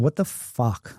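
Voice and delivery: put-on panicked outburst. Retelling waking up restrained after an accident, retelling a panicked outburst. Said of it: "I'm I'm freaking out".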